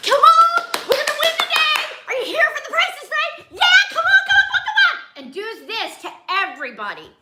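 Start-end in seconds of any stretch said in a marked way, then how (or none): 0.0-5.2 very high, rushed, overexcited hyped-up cheering. Retelling what a woman at the price is right said to everybody, imitating an overexcited woman. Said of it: "you got to calm down".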